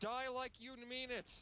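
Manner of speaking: mock heroic cry, high-pitched and slow.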